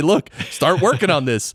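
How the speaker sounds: ordinary delivery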